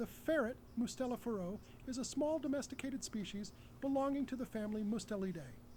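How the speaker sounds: high-pitched voice. Demonstrating a newly chosen reading voice on a passage of text, high-pitched voice. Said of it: "with my new high-pitched voice".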